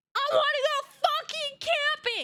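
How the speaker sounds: put-on angry outburst blurted at very high pitch. Retelling how the dad ended a family fight: imitating dad's angry outburst. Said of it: "Like a sixty-year-old man saying that".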